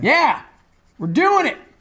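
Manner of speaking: loud yelling. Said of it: "no sense in yelling".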